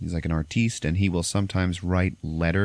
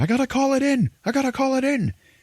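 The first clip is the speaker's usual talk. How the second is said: very high, urgent shouting yell; 3 dB louder than usual. Retelling a film's opening shootout: imitating someone yelling out. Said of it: "somebody yell out".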